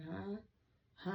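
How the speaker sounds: put-on groggy, half-asleep voice. Retelling being woken from a dead sleep, imitating being groggy. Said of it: "I was groggy and I was like".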